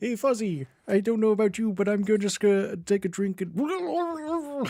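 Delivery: high cartoon frog voice with drawn-out "and". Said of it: "It's Kermit choking on something".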